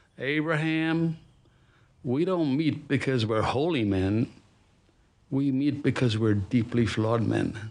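beautiful, slow, drawn-out Texas drawl. Retelling what a man said when he called him up: texas drawl. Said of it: "he said in his beautiful Texas drawl".

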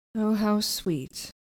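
sarcastic mopey tone. Voicing Dorian replying to an idea for a painting, emo sarcastic Dorian. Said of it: "I'm emo sarcasm".

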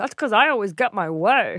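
mocking, bossy, put-on Northeastern accent. Imitating a bossy movie character explaining her nickname: imitating Rosie O'Donnell's character. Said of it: "I'm just imitating Rosie O'Donnell".

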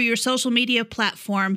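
ordinary talk

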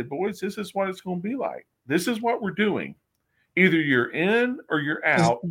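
put-on country accent. Retelling a leader's locker-room speech to the team: imitating Jim Kelly's country accent. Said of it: "does he really have that country accent".

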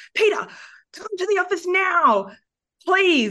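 furious, angry, very high-pitched yell. Recounting a script scene, the speaker acts out Mark yelling at another character. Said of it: "like yelled at Peter and was like".

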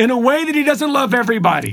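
mock impassioned yell, very high and forceful. Speaker recounting commentary he heard while driving his truck, retelling a yell. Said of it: "He yells it".

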